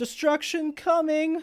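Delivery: shrill, very high, very loud, booming town-crier proclamation voice. Narrating a game scene to the players, voicing the town crier proclaiming. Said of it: "you hear the town crier like".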